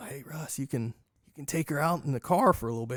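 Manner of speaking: sidling, sly, conspiratorial, confidential tone. Retelling how a regular snuck up to make an offer: imitating a half-whisper. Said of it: "kinda sneak up to me and whisper".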